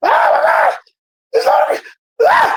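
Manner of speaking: mock high excited screams. Retelling arriving at the gates with a friend: retelling excited screaming. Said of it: "we get to screaming like some females".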